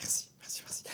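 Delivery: quiet whispered voice.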